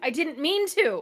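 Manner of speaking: startled, high outcry as if jolted awake. Playing a character who wakes from a dream, blurting a startled outcry. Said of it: "As she like jolts up in bed".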